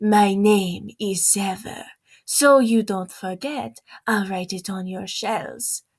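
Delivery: put-on rough, tough-guy Brazilian accent. Quoting a favourite line of a book character, the speaker does Zever's accent. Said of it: "if I was to quote him with the accent".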